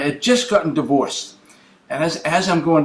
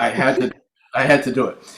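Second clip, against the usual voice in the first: ordinary talk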